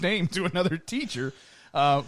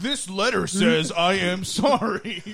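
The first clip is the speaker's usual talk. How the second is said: slow, sarcastic, forced, insincere delivery; 2 semitones higher than usual. Acting out reading a forced school apology on air: mock insincere apology reading. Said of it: "Just mock him".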